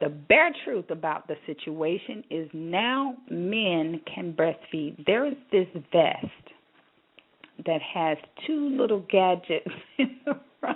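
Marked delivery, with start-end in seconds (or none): 5.1-10.8 fast delivery spoken through laughter. Radio host reading a news item live on air, laughing while talking. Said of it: "I'm not laughing".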